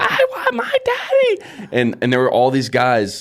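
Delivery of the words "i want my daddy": put-on very high, very slow, drawn-out toddler scream. Retelling how a toddler son carried to the car screamed: imitating a child screaming. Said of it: "he's screaming".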